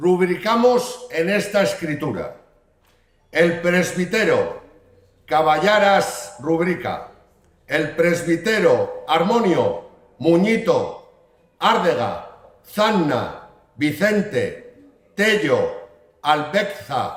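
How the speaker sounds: southern Spanish accent. The mayor reads aloud the charter of Brañosera: Andalusian accent. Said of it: "escuchar el fuero de Brañosera con acento andaluz".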